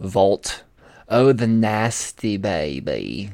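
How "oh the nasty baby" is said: very slow, drawn-out, silly comic character voice. Voicing a line that slips into an accidental Austin Powers voice. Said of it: "wasn't supposed to sound like Austin Powers".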